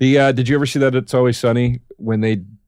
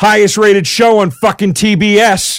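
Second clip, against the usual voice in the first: high, loud, slow, dead-serious rant. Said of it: "dead serious".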